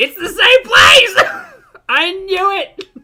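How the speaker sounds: high, very loud, drawn-out excited shriek. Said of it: "Sorry if I'm being loud".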